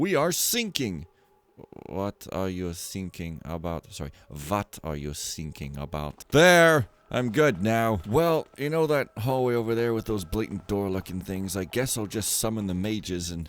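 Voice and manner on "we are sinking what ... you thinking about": put-on German accent in English. A player speaking as their German-accented character at the table, German accent. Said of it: "I'm the German accented person".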